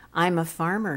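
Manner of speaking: plain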